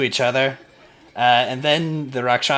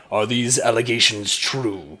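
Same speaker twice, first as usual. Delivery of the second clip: weighty, heavy, commanding, demanding tone. Voicing figures who drive a large pole arm into the ground: heavy, demanding voice. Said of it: "with heavy, demanding voices say".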